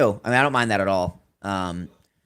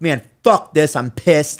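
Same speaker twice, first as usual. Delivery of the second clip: mock, petulant, angry tantrum outburst, ranting; 7 semitones higher, 8 dB louder than usual. Imagining him complaining to Triple H: mock angry hissy fit. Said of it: "throwing a hissy fit".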